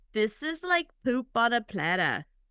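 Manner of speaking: put-on, fake Australian accent. Repeating a quoted line from the show: put-on Australian accent. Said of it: "then he sounded Australian".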